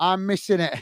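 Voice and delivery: ordinary talk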